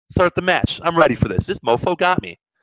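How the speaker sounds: ordinary delivery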